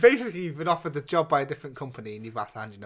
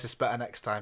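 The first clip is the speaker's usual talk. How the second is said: ordinary delivery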